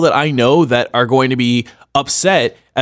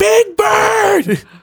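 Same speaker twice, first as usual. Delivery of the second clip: very high, shrill angry scream, bird drawn out. Joking about angrily screaming at a character: mock angry scream. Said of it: "Screaming at one of the characters".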